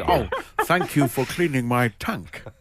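fish voice, speaking as a fish. Talking about cleaning a tank, the speaker does a fish impression. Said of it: "Was that a fish impression?".

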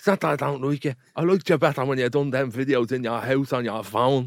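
plain conversational woman's voice. Retelling her answer when confronted after a few drinks that night, imitating a woman's reply. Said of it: "He's gonna love that impression".

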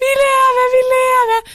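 put-on elated, very loud, very high, drawn-out shout. Recalling being lifted out through the windows alive, retelling being overjoyed. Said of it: "var overlykkelig".

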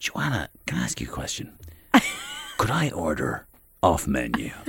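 very low, seductive, sultry film-trailer voice. Retelling how Tony ordered from a server, the speaker imitates Tony's sultry voice. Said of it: "after hearing that sultry voice".

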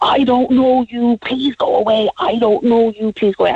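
put-on, mild, held-back scream, same words repeated. Retelling screaming at a man to go away: retelling a scream. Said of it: "I screamed at him".

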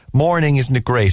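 ordinary talk, nothing marked

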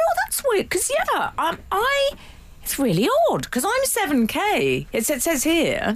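mock sing-song, slightly passive-aggressive voice. Recalling waving a ticket as evidence over a seat, retelling, slightly passive-aggressive voice. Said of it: "I'd adopted a slightly passive-aggressive voice".

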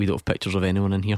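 low, flat, level, deadpan monotone. Retelling a restaurant's refusal, quoting what they said in a flat monotone. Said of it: "in a very monotone explanation".

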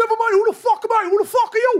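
put-on very high, loud, tough Cork accent. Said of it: "How can you do such a good Cork accent?".

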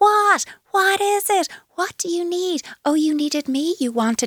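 very high, pitch-matching voice, pitched way up. Demonstrating how to answer a screaming two-year-old: higher-pitched voice. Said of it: "at a higher pitch".

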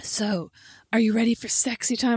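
put-on sexy, seductive voice. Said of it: "sexily put my leg around his door".

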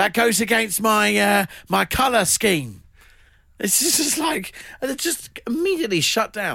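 put-on high East London accent. Quoting a woman's reply in an east london accent. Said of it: "then a East London accent".

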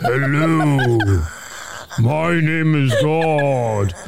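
deep, very slow voice, every word drawn out. Mocking how God always sounds in cartoons, deep booming God voice. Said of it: "always has a deep voice".

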